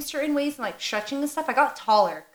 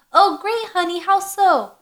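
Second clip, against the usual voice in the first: high, loud, sarcastic, mocking mom voice; 6 semitones higher, 6 dB louder than usual. Recalling how dad mocked the family, retelling dad's mock of mom. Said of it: "Change voice to mock my mom's".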